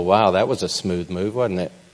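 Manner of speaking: ordinary delivery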